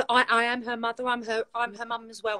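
ordinary delivery

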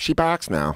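put-on Boston accent, pitched a bit high. Quoting the mom after returning to pick up the dog, boston accent. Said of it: "her mom just in a Boston accent goes".

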